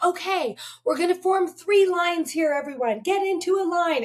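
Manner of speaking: mock megaphone-style, high-pitched yelling. Retelling taking charge of a stranded airport crowd with a megaphone: imitating a yell. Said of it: "I just started yelling at people".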